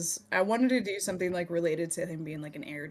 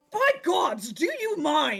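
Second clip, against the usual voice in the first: very high, shrill, irritated angry snap; 10 semitones higher, 6 dB louder than usual. In a tabletop game, a character turns on the noisy other player characters with an angry snap. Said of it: "he turns around just like red faced".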